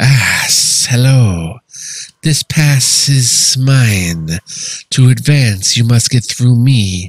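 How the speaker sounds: snarling serpent-monster voice. A narrator voices the Naga speaking to you, in a snarling Naga voice. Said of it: "She snarls at you".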